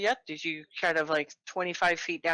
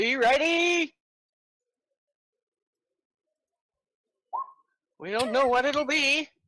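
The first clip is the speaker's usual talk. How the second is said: very high-pitched, swooping called-out voice; 10 semitones higher, 5 dB louder than usual. Voicing the supervisors as everyone lines up: supervisors calling out a warning. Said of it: "you can hear the supervisors going".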